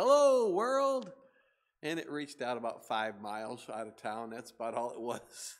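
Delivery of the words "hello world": booming, shrill, very high, very loud, thrilled preacher voice. Retelling a radio preacher's first broadcast greeting: imitating an excited preacher. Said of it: "he's so excited".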